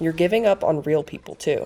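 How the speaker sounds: normal talking voice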